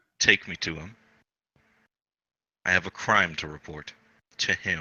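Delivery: quiet, menacing, threatening half-whisper, very close. Player's character bends to speak into a man's ear, a little menacing half-whisper. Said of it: "I kind of say that a little bit menacingly".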